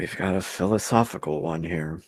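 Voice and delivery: slow, voiced stage half-whisper. Leaning over to the rest of the party in character: half-whispering. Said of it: "to the rest of the party and whisper".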